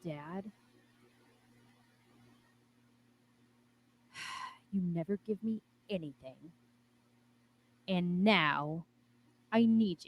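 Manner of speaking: whispering under breath. Praying to a father out of earshot of Lordy: whispering under breath. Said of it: "sort of whisper under my breath".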